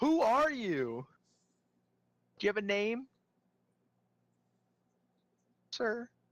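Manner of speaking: very high, swooping shouted yell. A player's character flails a sword at a purple creature, yelling. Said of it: "I want to yell at him and be like".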